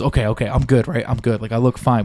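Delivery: put-on anxious, fretting, nervous child voice. Retelling how the kid asked if he looked fine: imitating a nervous kid. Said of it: "this kid was so goddamn nervous".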